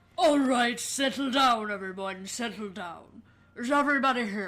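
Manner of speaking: loud, booming delivery. Opening a role-played courtroom scene as the judge, Judge Maximus voice. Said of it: "do you want me to do Judge Maximus?".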